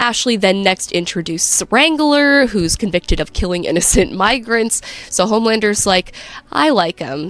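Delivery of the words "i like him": play-acted, low, dry, unemotional delivery. Recapping a scene, quoting Homelander's reaction to Wrangler: deadpan. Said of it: "sort of deadpan".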